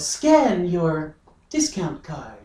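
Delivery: slow, machine-like robot voice. Retelling what the self-checkout machine says: imitating self-checkout computer voice. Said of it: "the little computer voice that goes".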